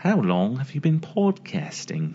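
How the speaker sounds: uncanny, convincing put-on British accent. Asked to repeat a question to show off an accent: British accent impression. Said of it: "a really good impression of a British accent".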